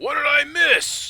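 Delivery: booming bellow, very high and very loud. Narrating, the speaker voices Cutler calling from the corridor's end: Cutler's loud booming voice. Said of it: "you hear a loud booming voice".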